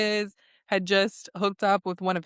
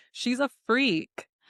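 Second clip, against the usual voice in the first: ordinary delivery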